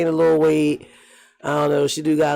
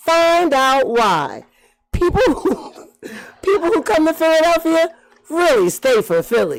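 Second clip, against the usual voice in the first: put-on airport announcement voice, higher; 13 semitones higher than usual. Imitating the mayor's welcome announcement at the airport: Mayor Sherelle Parker impression. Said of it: "the part that all my coworkers like me to imitate".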